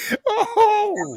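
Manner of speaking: very high squeal, laughing hard.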